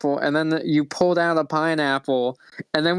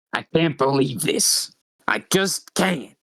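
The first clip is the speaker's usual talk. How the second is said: really raspy, rough-edged character voice with heavy rasp. Narrating a woman rushing to the elevator, voicing her in a really raspy voice. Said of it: "I gave her a really really raspy voice".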